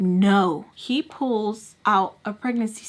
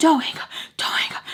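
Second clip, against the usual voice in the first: put-on breathy, panting, urgent whisper; 6 semitones higher than usual. Retelling a phone call where her mom screamed: imitating someone screaming and panting.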